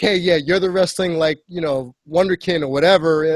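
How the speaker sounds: usual speaking voice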